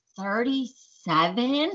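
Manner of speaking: slow, drawn-out, incredulous tone.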